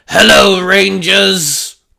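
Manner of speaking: loud, rough, creaky growling monster voice. Reading a story aloud, voicing a monster greeting heroes: growling monster voice. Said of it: "the monster growled".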